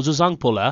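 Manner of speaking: ordinary talk, nothing marked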